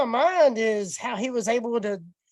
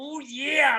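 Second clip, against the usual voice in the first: raspy, rasping put-on wrestler promo voice; 2 semitones higher than usual. Imagining him reaching first base in a raspy voice: Macho Man voice. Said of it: "Could you imagine him getting first base and".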